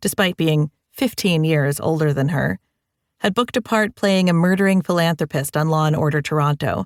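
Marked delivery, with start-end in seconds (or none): none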